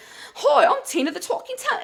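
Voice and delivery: put-on British accent, very high-pitched. Retelling voicing a squished talking tummy: put-on British accent. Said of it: "a British accent".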